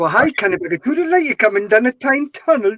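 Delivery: mock Geordie accent that sounds Welsh. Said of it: "I never knew it was in Wales".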